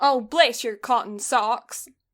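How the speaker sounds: mock, put-on, fake American accent. Trading folksy phrases with another speaker, the speaker uses a put-on american accent. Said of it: "the accent just twitches on socks".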